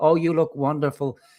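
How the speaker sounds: imitated fawning tone. Imitating fawning commenters in a live chat: mocking fawning chat simps. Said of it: "the amount of simps in our chat".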